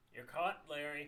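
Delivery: plain reading voice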